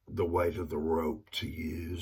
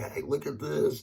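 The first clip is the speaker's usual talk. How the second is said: very high, high-pitched shouting yell; 10 semitones higher, 3 dB louder than usual. Retelling a man burning money during an argument: imitating someone yelling. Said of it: "And he's yelling".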